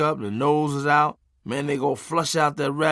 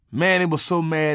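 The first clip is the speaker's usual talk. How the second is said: usual speaking voice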